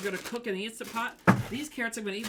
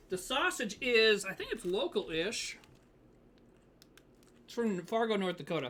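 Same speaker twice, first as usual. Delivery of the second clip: speaking between bites with mouth full. Answering a question mid-meal, talking while eating. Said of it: "sorry i'm eating".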